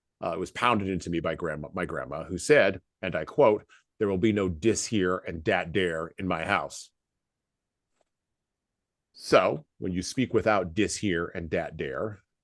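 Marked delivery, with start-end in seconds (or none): none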